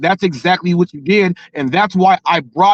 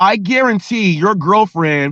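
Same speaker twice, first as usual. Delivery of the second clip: ordinary delivery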